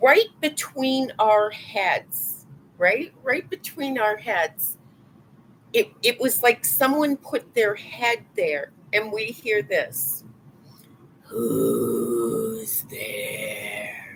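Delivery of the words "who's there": very deep, low, gravelly voice, drawn-out who's. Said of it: "in a gravelly voice like that".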